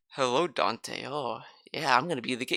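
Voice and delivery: very quiet, low, cool, smooth suave villain voice. Retelling a game boss's first appearance: imitating a cool, suave villain. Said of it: "so cool and suave".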